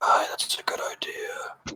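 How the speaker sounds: very quiet, very slow, hushed whispered aside. Playing a character who looks toward another and speaks very quietly. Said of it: "Very quietly".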